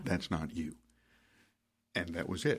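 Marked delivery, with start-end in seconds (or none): 0.0-0.8 put-on calm soft near-whisper, lower and quieter. Retelling a calm reply to an angry outburst: imitating a calm near-whisper. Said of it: "almost whispers".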